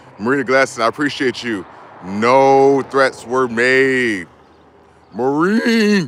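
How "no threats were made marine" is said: loud, breaking, cracking voice, very slow and drawn out. After thanking someone by name, speaking with a cracking voice. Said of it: "I'm cracking my voice right now".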